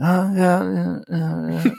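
high, uninterested, dismissive, bored delivery. Describing a movie character's reactions: Casey Affleck impression. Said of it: "which is my Casey Affleck impression".

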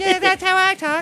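very high squeaky voice.

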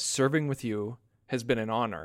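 plain

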